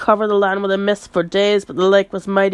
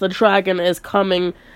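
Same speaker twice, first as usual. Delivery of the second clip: normal talking voice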